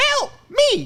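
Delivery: very high-pitched, loud squealing yelp. Recalling a famous clip: high-pitched Kevin Hart impression. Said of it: "Is it that high-pitched".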